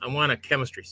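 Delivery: put-on deadpan, flat delivery. Retelling a little girl's christmas wish: imitating a deadpan delivery. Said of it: "looked straight at me, deadpan".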